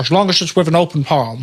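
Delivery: put-on Scottish accent in a film star style. Quoting an old interview about a famous clip: Sean Connery impression. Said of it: "I can't do impressions".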